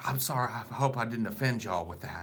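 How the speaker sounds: put-on sweet, overly apologetic little old lady voice. Retelling how the old lady at the counter apologized: imitating an apologetic old lady. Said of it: "so apologetic and with no reason".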